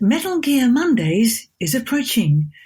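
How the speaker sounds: calm, AI-like computer voice. Asked to say a line as the iDroid for the hosts, in iDroid voice. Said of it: "saying something as the iDroid for us".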